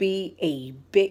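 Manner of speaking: ordinary delivery, nothing marked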